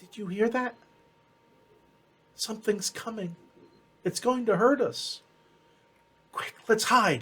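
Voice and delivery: tiny, soft, high, scared little voice. Storyteller voices someone heard after walking a little ways, in a small little voice. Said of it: "it's a little a little small voice say".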